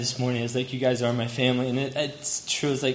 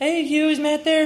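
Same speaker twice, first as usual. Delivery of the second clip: put-on very high-pitched little kid voice; 14 semitones higher, 5 dB louder than usual. Recalling phoning the Rowans as a child, the speaker uses a high little kid voice. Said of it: "my little high little kid voice".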